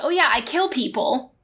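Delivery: ordinary talk, nothing marked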